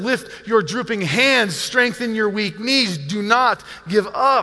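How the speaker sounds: slow, urgent pastoral pleading voice.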